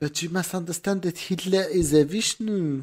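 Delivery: put-on French accent. Attempting an impression of a figure being discussed: put-on french accent. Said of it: "Is that a French accent?".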